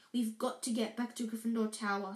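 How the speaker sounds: plain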